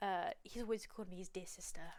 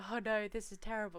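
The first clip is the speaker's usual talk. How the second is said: crushed, heartbroken, grief-struck voice; 3 dB louder than usual. Retelling a past talk about being young, imitating own heartbroken self. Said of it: "so like heartbroken".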